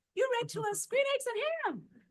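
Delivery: put-on very high, loud small child's voice. Recalling a school visit, quoting a little kid; little kid's high-pitched voice. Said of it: "Had this little high pitched voice".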